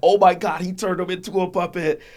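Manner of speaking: very high, very loud, shrill, top-of-the-lungs yell. Retelling watching the puppet scene: imitating own past yelling. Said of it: "I was yelling at the top of my lungs".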